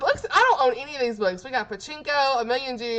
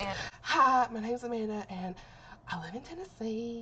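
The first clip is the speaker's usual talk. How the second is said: very hushed, trembling, nervous, shaky voice; 11 dB quieter than usual. Recalling how her voice used to sound, she redoes her intro, imitating her old shaky voice. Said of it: "how shaky my voice was".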